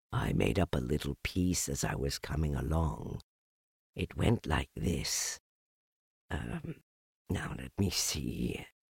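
very deep, low, hushed, soft murmuring voice. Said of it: ""Lines written by a bear of very little brain".

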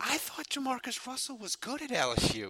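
put-on soft, high, let-down disappointed mom voice. At a game, retelling what the speaker's mother turned and said, imitating mom's sad voice. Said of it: "she said in that sad, like, mom voice".

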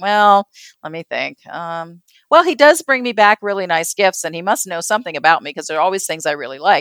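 ordinary delivery

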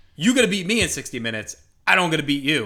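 ordinary talk, nothing marked

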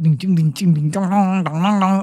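mock house music beat, low and pounding. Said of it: "House music".

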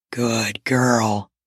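very low, deep, gruff voice. A narrator reads a man's command to a woman, in a deep, gruff voice. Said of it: "Mondo commanded in a deep, gruff voice".

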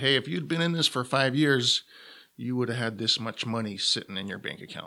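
ordinary delivery

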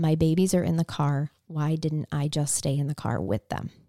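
normal talking voice

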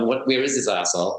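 ordinary delivery

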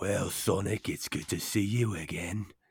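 put-on British accent. Joking that Knuckles might be British, greeting Sonic in a fake British Knuckles voice. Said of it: "Does he have a British accent?".

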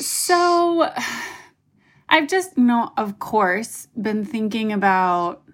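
choked-up voice, on the verge of tears. Answering a question about their idea, choking up, about to cry. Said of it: "oh man, I'm going to cry".

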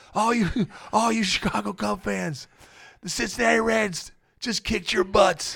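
put-on slow, high, drawn-out, rough-edged gloating shout. Retelling the moment of shouting at Chicago Cub fans, retelling a yell. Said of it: "And I'm yelling".

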